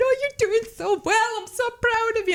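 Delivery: teary, very high-pitched cheering. Runner recalling cheering strangers at a race finish line, retelling tearful cheering. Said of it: "crying my eyes out".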